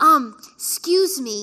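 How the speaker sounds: put-on loud little-kid voice. Retelling a child creeping in at night to speak: imitating Liam. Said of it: "that's how he talks".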